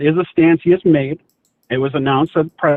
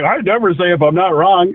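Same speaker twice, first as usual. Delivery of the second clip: mocking put-on voice, higher pitch; 3 semitones higher than usual. Arguing and mimicking the opponent who won't concede: mocking imitation of the other speaker. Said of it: "You're like".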